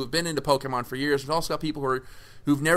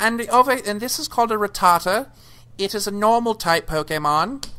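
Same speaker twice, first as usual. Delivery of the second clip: put-on high, loud little kid voice, vague accent; 7 semitones higher, 5 dB louder than usual. Speaker imagines a six-year-old educating journalists, imitating six-year-old Tim. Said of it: "six year old Tim is going".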